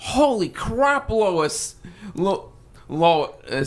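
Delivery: very slow, high, swooping, sing-song character voice. Speaker giving an example of the voices he does: Peter voice. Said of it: "a really good Peter voice".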